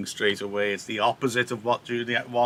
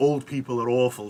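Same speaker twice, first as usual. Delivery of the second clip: usual speaking voice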